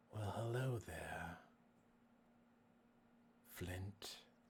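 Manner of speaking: eerie, unsettling, soft, creepy voice. A character greets another character, in a creepy voice. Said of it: "you creepy voice".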